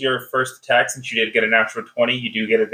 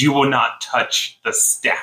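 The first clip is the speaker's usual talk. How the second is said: growled, snarling she-wolf voice. Storyteller voicing a she-wolf answering the player, growling wolf voice. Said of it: "She growls back at you and she says".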